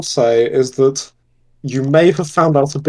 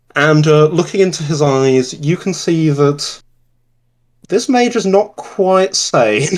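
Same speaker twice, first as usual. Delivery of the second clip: normal talking voice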